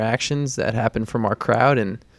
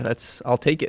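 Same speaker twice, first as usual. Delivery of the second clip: ordinary delivery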